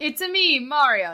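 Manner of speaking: very slow character voice, every word drawn out. Doing a quick impression while others discuss the Mario trailer: Mario impression. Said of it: "That's not what it sounds like".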